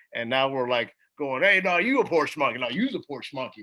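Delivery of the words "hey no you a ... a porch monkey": laughing, playful, joking mock teasing. Speaker retells friends teasing each other on the plane home, retelling joking banter. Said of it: "and like laughing at each other".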